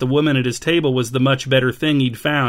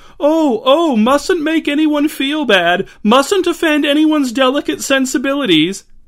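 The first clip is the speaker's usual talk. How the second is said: very high, silly, affected foppish voice; 13 semitones higher, 3 dB louder than usual. Narrator reads Cash's reply to Liam, in a silly foppish voice. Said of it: "adopted a silly, foppish voice".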